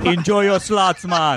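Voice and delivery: slow put-on Jamaican accent, words drawn out. Acting out a man dusting gamblers at a casino: put-on Jamaican accent. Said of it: "a Jamaican man is the one who blew it at you".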